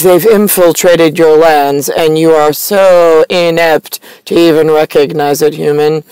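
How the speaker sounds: ordinary talk, nothing marked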